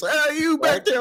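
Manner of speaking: mock shrill, very high-pitched yelled holler. Mocking a celebrity yelling at the audience, imitating Anthony Mackie yelling. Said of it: "he's just yelling at people".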